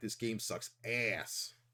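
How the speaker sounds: bad hushed, breathy, whispered nerd voice. Recalling playing a game for an old YouTube channel, in a bad nerd impression. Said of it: "I did my bad nerd impression".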